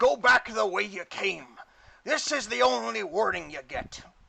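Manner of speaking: harsh, grating call. Reading an adventure aloud, voicing a harsh voice calling from the shadows. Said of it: "a harsh voice calls from the shadows".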